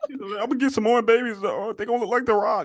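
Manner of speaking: put-on straining voice. Imitating a woman's remark while talking with friends, in a put-on constipated-sounding voice. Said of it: "He sounds like he's constipated or something".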